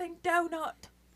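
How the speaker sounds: high, fast, spat-out chef voice impression. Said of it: "people take his voice".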